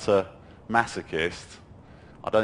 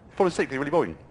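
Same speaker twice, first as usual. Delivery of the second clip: rushed, very fast, quick delivery; 6 semitones higher than usual. Repeating a mean thought in different ways to change it, very fast. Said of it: "Or I'll go fast".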